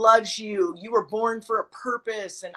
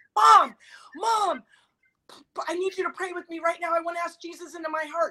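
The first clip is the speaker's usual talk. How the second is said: put-on urgent begging, higher; 8 semitones higher than usual. Retelling asking a mom to pray right now: imitating an urgent plea.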